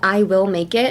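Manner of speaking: ordinary talk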